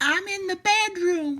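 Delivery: quavering, wobbly, very high-pitched voice. Reading a fairy tale, the wolf answers the girl in a high-pitched, wobbly voice. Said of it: "replied the wolf in a high-pitched, wobbly voice".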